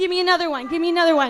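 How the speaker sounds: ordinary delivery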